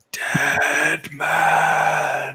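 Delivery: breathy undead ghoul voice. Telling a story, voicing the skeletal figure pointing at you: ghoulish, breathy voice. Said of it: "a just a ghoulish, breathy voice that says".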